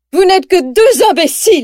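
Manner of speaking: high, furious, angry, frustrated yell. Narrator reading a story, voicing a character whose car was just hit: furious frustrated shout. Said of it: "hurle Cruella, frustrée et en colère".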